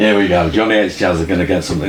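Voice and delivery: ordinary talk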